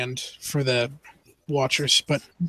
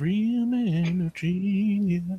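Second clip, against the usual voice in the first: very slow, high, drawn-out half-whisper; 5 semitones higher, 6 dB quieter than usual. Narrating a scene where Felix turns to Aiden: half-whispering. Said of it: "Felix turns to Aiden and whispers".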